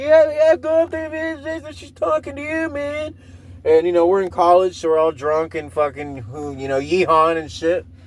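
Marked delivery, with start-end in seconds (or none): 0.0-3.1 high, hyped-up, rowdy voice. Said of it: "my friends are all like".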